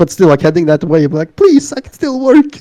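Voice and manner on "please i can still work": mock pleading, higher pitch. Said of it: "pleading and like".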